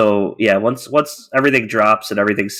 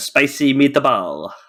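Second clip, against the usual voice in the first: awful put-on Italian accent; 5 semitones higher than usual. Describing early artwork from an artist, says it in an awful italian accent. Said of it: "forgive my awful Italian accent there".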